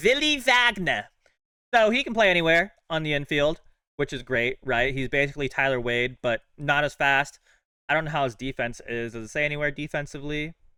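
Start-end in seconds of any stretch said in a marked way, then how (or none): 0.0-1.0 high, put-on German accent. Discussing infield options, saying a player's name in a put-on german accent. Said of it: "I don't know why I put a German accent on it".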